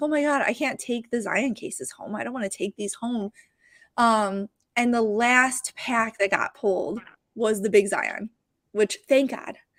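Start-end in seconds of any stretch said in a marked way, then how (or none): 0.0-3.3 acted-out, panicked, freaked-out delivery. Recounting a long day of kids pulling packs, the speaker retells own panic. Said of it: "I'm freaking out".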